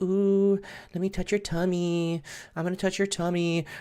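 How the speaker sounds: soft, high, cute and cuddly cooing voice. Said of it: "He was like all cute and cuddly".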